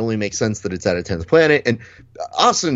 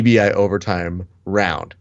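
usual speaking voice

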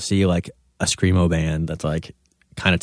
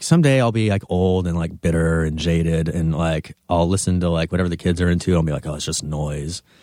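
plain

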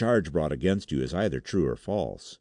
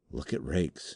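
hushed whisper, much quieter; 6 dB quieter than usual. Narrator reads a companion tugging at his sleeve: whispered. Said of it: "he whispered".

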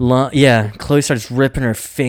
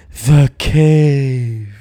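put-on ghostly spirit whisper; 4 dB louder than usual. Retelling a scene where a spirit comes out of a mouth: imitating a spirit whispering. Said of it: "it whispers".

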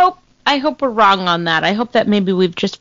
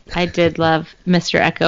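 ordinary delivery

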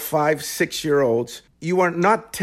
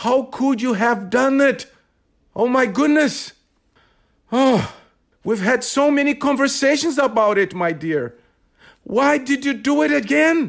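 passionate, upset, exasperated delivery, higher-pitched; 9 semitones higher than usual. Improvising a man scolding his daughter: upset, frustrated father. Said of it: "he spoke with great passion and frustration".

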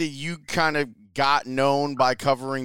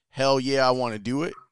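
ordinary talk, nothing marked

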